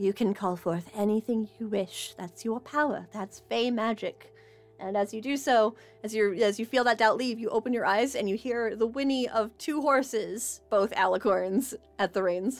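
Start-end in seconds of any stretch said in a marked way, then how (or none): 0.0-4.3 quiet, soft whisper. Voicing Oberon, who smiles at a doubting player: whispering quietly. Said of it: "he whispers quietly".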